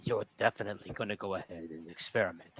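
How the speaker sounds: low, soft hush. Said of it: "lower her voice".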